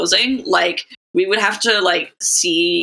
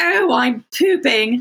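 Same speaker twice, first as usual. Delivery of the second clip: put-on, high, vaguely British lady-like accent; 6 semitones higher than usual. Recalling a lady in an aggressive advertising campaign: vaguely british lady voice. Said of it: "a vaguely British lady in like a".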